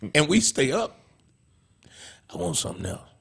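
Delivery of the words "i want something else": soft, breathy whispered voice. Voicing a hungry stomach after dinner: voicing his stomach. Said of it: "That's how your stomach sounds".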